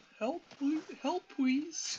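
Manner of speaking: put-on very high, sobbing, crying little-kid toddler voice. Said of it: "he started sobbing and crying".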